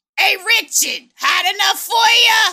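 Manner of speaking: put-on brash New York accent, very loud, very high. Describing a film's opening, speaker imitates a new york guy, new york accent. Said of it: "a very New York guy being like".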